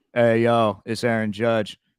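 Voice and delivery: flat monotone drone with no upward lift. Retelling a voicemail he left, Aaron Judge monotone voice. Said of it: "in his monotone ass voice".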